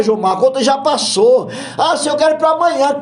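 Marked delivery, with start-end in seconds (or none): 1.8-3.0 high, impatient, pleading tone. Acting out a believer demanding an answer from God: acting an impatient demand.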